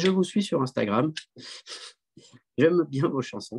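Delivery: put-on southern French accent. Retelling what she said when she invited him: imitating her in a southern french accent. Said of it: "je sais pas pourquoi je prends l'accent du Sud".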